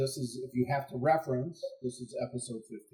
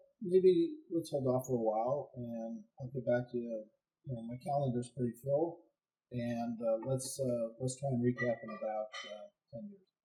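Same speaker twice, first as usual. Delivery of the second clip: ordinary talk, nothing marked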